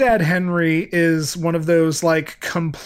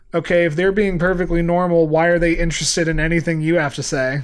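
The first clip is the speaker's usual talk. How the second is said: ordinary delivery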